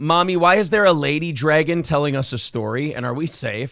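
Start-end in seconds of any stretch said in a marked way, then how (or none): none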